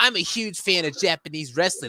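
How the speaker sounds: funny, goofy put-on voice. Retelling a game character's lines: imitating Mark's funny voice. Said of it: "he has this funny voice where he's like".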